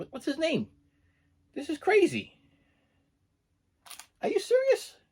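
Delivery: very high, swooping, baffled confused voice of disbelief. Checking a movie cover for an actor's name that isn't there: high confused voice. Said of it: "I'm talking in high voice because I'm so confused".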